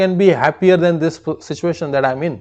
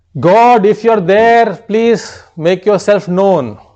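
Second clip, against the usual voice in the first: loud, raised, carrying shout aimed upward; 3 semitones higher, 5 dB louder than usual. Telling a humorous story, a man on a mountain peak shouting to God. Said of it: "started shouting".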